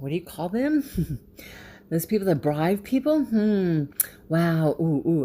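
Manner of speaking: fake puzzlement, heavy with sarcasm. Pretending to forget what bribers are called, sarcastic mock puzzlement. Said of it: "I'm being sarcastic here".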